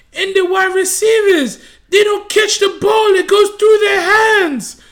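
put-on shrill, loud, high-pitched Brazilian accent, popping off. You retell how a woman was popping off while walking through the stadium, put-on Brazilian accent. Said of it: "in her Brazilian accent".

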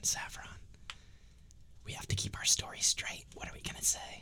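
whispered, hushed, barely voiced. During the game, a player whispers over to fellow player Saffron, whispering. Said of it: "I'm going to whisper over to Saffron".

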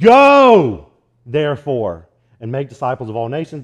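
heavy emphasis landing on the word go. Quoting a verse the way missionaries said it, strong stress on "go". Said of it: "I always heard it said like this / they would put all that emphasis on the word go".

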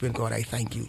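soft whispered voice. Retelling a daily prayer of thanks, imitating own whispered prayer. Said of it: "all my day I'm whispering".

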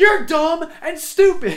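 very high-pitched, shrill, very loud yelling. Retelling a hallway argument, the speaker acts out the other man's reply: retelling a yell. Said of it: "he's just yelling back at me like".

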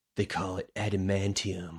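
untrained, unpolished, amateur non-actor delivery. Imitating how a non-actor voiced a line: amateur non-actor line reading. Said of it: "the voice is just like this, a non-actor".

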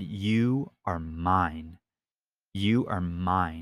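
very slow, drawn-out evil voice. Retelling a voice heard in a sleep paralysis dream: imitating an evil voice. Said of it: "this evil voice s-, just said".

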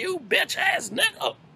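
very high-pitched, disparaging voice. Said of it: "His voice got high pitch".

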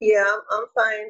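flat, lifeless monotone with no personality. Showing how a reply to how are you sounds flat, no energy. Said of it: "that is so flat. There's no personality to it".

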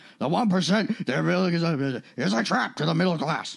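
put-on squid-like sci-fi alien admiral voice. Doing a joke impression for the others: Admiral Ackbar voice. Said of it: "that was my Admiral Ax".

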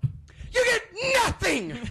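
put-on, very high, way-too-loud yell. Quoting Gene Wilder losing it at the end: imitating Gene Wilder yelling. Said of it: "I'm sure I just got really way too loud".

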